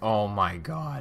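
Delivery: voice suddenly breaking mid-exclamation. Talking about a game console on camera, the voice cracks. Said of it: "that was a voice crack".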